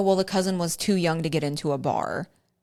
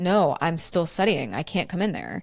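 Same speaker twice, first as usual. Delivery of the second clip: play-acted hostile, aggressive retort, swooping pitch. Retelling a partner refusing to come to bed: imitating an aggressive reply. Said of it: "it was very aggressive".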